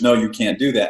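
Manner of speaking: ordinary talk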